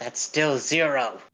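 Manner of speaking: hushed whisper. Whispering aside to Milo during a pay negotiation: whispering. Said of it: "I whisper to Milo".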